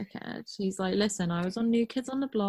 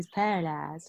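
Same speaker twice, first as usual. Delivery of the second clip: mocking mumbled, mush-mouthed speech; 3 semitones lower than usual. Imitating a character saying a line, mocking his mush-mouthed delivery. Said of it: "You got a little bit of mush mouth".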